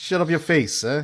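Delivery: put-on loud, high Sicilian Italian accent. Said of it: "speak with uh, Sicilian dialect".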